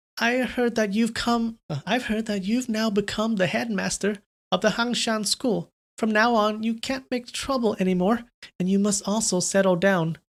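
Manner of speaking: put-on middle-aged lady voice. Reading a story aloud, voicing a teary older woman: middle-aged lady's voice. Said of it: "an old lady's voice or a middle-aged lady's voice".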